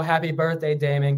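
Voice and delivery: plain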